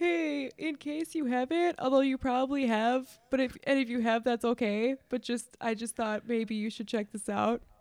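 put-on meek, over-apologetic, timid tone. Joining in, acting out a friend's timid music-sharing message: imitating a timid tone. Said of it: "so timid".

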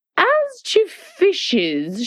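very slow, grave, solemn, drawn-out, very high pitched. A queen, putting her mouth close to the listener's ear, speaks very slowly and solemnly. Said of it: "she said very slowly and solemnly".

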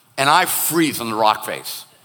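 ordinary talk, nothing marked

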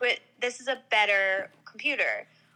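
ordinary talk

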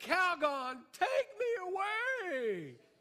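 shrill, loud exasperated scream, "away" drawn out. Retelling yelling a commercial catchphrase across the belt: retelling a scream. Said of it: "I screamed out".

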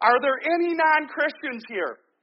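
put-on shout. Retelling a youth pastor calling out to a packed youth group, retelling a yell. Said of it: "the youth pastor yells out".

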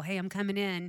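ordinary talk

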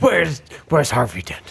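put-on gruff superhero voice.

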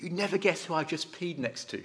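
hushed, soft, under-the-breath voice. Speaker recalls a student outside the gents at a conference: imitating a hushed tone. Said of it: "one said in a hushed tone".

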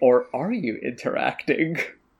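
knowing, smug, self-satisfied tone. Imagining game developers smiling and questioning players: mock-smug developer voice. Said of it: "smile very smugly and say".

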